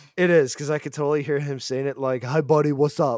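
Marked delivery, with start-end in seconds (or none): 2.3-3.2 put-on broad, laid-on, thick New Jersey accent. Imagining a driver saying his own screen name, in a thick new jersey accent. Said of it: "in the most New Jersey accent he has".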